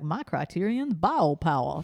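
swooping, exaggerated, big cartoon drawl. Speaker imitates a high school debate opponent in a Foghorn Leghorn accent. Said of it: "a kid who had a foghorn leghorn accent".

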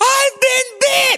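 very high, shrill screamed cry. Retelling how the boy in front suddenly screamed in the water: imitating a boy screaming. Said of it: "I hear the boy that went in front of me scream".

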